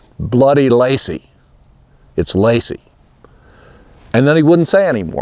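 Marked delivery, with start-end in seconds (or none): 0.2-2.8 slow, gruff, reluctant growl. Asking about a strange horse, the speaker retells Milton's answer: retelling Milton's growl. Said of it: "And he sort of growled".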